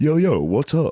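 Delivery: put-on slangy dad voice, high and slow.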